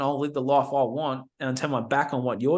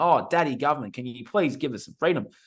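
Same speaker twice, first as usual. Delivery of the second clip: mock begging and pleading. Mocking people asking the government for freedom: mock begging and pleading. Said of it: "begging and pleading with the government".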